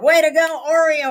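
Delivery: loud, very high cheering shout. Telling a story, the speaker reenacts what they yelled out: retelling a loud yell. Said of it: "And I yelled real loud".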